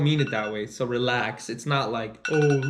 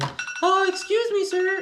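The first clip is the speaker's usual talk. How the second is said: put-on timid insecure child voice, very high and slow. Describing an insecure kid at a candy shop: unsure shy insecure kid voice. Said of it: "unsure, shy, like, insecure kid".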